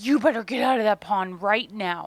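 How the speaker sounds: fast, stressed, panicked fussing voice. Retelling calling to a girl swimming in a pond, in a retold panicked, fussing mom voice. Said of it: "full on mom voice, like panicked but stressed and like fussing at her".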